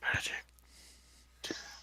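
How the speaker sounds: soft, slow whisper. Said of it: "I whisper it to them".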